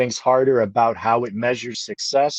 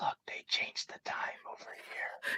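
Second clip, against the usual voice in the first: breathy, very soft, almost silent ASMR whisper. Retelling a quiet moment from watching a deadline change: imitating own whisper. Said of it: "I whispered, like, it was almost like A S M R".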